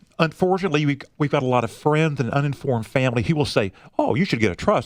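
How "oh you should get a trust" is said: plain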